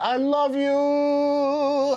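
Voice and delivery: very high, loud shouting, long drawn-out "you". Saying I love you to absent friends, said loud. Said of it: "I'll say it loud".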